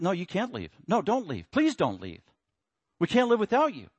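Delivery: mock begging, desperate pleading voice with swooping pitch. Acting out the disciples begging Jesus not to leave: imitating pleading disciples. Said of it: "they're pleading with".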